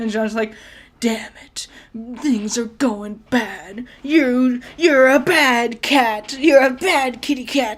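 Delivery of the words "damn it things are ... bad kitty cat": slow, drawn-out voice straining to sound edgy. Mocking a character's new performance as try-hard: mocking Jean's try-hard voice. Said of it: "it's so fucking try hard".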